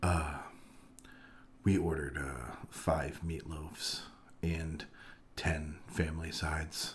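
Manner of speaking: dead flat, very quiet, low one-note monotone. Retelling what the man with the bags told the group, in a flat monotone. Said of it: "He is one hundred percent monotone".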